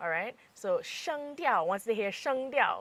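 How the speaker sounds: stress on 声调. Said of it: "that's the key word there".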